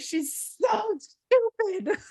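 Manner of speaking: high-pitched, furious, angry tirade. Speaker reenacts what she told her mom after reading: retelling an angry outburst. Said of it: "slammed my fist on the counter and was like".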